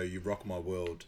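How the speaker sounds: ordinary talk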